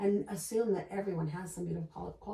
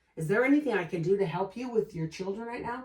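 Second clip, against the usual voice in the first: sarcastic tone with a raised voice; 6 dB louder than usual. Retelling what Stephen said to a man: imitating Stephen's sarcastic tone. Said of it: "kinda did it in a sarcastic way".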